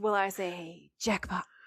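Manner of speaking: mock overly dramatic, over-the-top delivery. Retelling a scene from a show, quoting a character: imitating an overly dramatic line. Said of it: "he does it so overtly dramatically".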